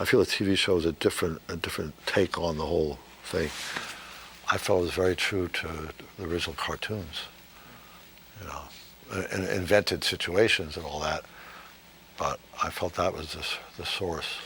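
speaking low and quiet. A speaker answers the host's question on a played recording; very low tone. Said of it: "he's talking in a very low tone".

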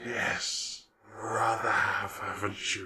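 slow, low royal-sounding voice. Game master voicing the Spider Queen in her royal chamber, in the Spider Queen voice. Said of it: "and you're led through into the royal chamber where that huge spider that you met many, many episodes ago. Yeah. Your friend the Spider Queen is".

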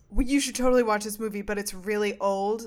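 ordinary delivery

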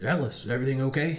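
put-on rough, gruff country-boy voice. Quoting the man who saw the speaker upset after an exam, in a gruff redneck voice. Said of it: "in his, like, really, like, gruff, like, redneck voice".

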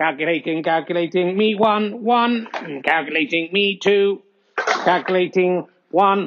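mechanical, robotic, machine-like voice. Host switches to a robot voice to announce the scores, robot voice. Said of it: "Let's go over to Robot Voice".

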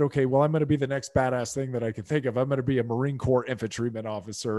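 ordinary talk

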